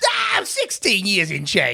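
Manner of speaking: very high-pitched grumbly voice. Voicing a taxi driver asked how long he has driven taxis, [name]'s high grumbly voice. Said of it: "high pitch, but and sort of like grumbly".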